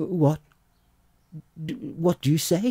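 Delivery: high, joy-struck, tongue-tied stammer with stumbling words. Major Kovalov, told by the police commissary his nose is found, stammering. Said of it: "stammered Major Kovalov".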